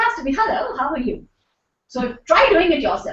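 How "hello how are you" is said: smiling voice, quieter. A speaker teaching how a smile sounds in the voice, smiling while speaking. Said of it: "So if you're smiling".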